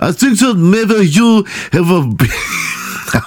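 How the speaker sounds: fake French accent, very high and very slow. Trying accents one after another, switching from German to French: bad French accent. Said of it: "I'm going to be French".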